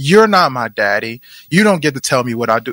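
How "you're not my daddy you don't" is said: ordinary delivery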